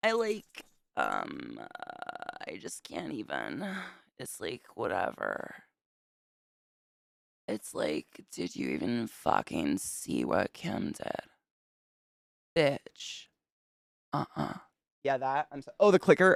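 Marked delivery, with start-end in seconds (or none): 0.0-14.5 slow, soft, drawn-out vocal fry. Demonstrate vocal fry by playing a Kardashian, with Kardashian vocal fry. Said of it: "Vocal fry".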